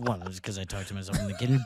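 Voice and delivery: very low mumble under the breath. Imitating a roommate muttering to herself: imitating someone muttering to herself. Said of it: "She's gonna be muttering, muttering to herself".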